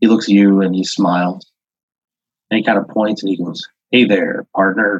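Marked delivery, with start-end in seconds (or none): 3.9-5.0 put-on spotless, perfect American accent. Voicing a figure in the game who greets the player: perfect American accent. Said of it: "a perfect American accent".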